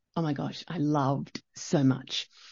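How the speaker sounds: plain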